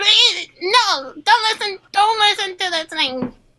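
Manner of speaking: very high, frantic, desperate pleading sheep voice. Voicing a sheep trying to talk over the wolf: sheep pleading frantically. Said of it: "And then the sheep's like".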